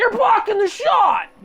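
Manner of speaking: very loud, high, shrill, scary shout. Cooking show host quoting the camera guy, imitating a scary voice. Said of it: "that was a pretty scary voice".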